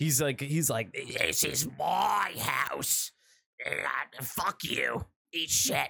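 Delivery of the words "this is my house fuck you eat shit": acted furious old man ghost voice, slow and creaky. Retelling what a dead old man in a movie says: imitating a pissed-off old man ghost. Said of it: "he's just super pissed off".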